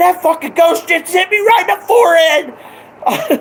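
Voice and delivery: very high-pitched, thrilled, excited outburst. Retelling what the dad said after being hit: imitating excited dad. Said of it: "this is the most excited I ever seen my dad".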